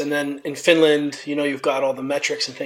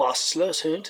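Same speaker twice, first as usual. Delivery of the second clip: soft German in a really bad surfer accent; 5 dB quieter than usual. Showing how the family turns german phrases into a bad surfer accent. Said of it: "turn it into a really bad surfer accent".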